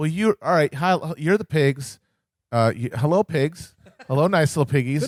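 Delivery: play-acted, condescending, talking-down politician voice. Imitating politicians talking down to voters as pigs: imitating condescending politicians. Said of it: "Every single other politician on both party sides is at some level being like".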